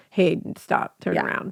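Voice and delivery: breathy, whispered, breathed-out delivery. Retelling a scene, imitating Edward warning her: imitating Edward. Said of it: "'cause Edward was like".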